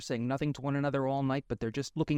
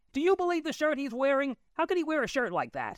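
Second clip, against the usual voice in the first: mock very high, swooping, carrying top-of-lungs shriek; 12 semitones higher than usual. Imagining the aunt yelling into her smartphone: retelling a yell. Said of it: "yell at the top of her lungs".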